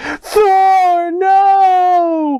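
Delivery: squeaky, tearful, very high, drawn-out crying wail. Retelling a movie scene where Thor is dying: imitating Miss Marvel crying. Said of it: "crying, like, she's like".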